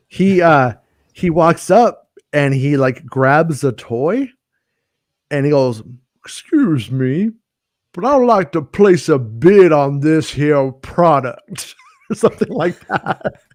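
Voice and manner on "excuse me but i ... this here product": exaggerated Texas accent. Retelling Damone grabbing a toy and speaking up, imitating Damone with a big Texan accent. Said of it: "he is talking like a big Texan".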